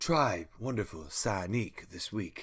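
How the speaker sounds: shampoo-ad announcer pitch, hair product commercial voice. Pretending the creature's name is a hair product: hair product commercial voice. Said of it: "sounds like a hair product as well".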